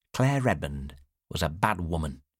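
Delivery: plain reading voice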